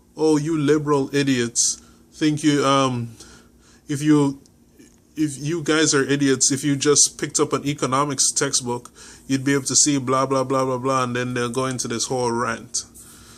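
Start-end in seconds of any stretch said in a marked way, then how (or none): none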